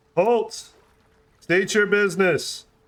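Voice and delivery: big booming voice, pitched a touch high. Game master voices a call from the magical city barrier, booming voice. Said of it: "you hear a very booming voice".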